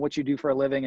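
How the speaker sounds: ordinary talk, nothing marked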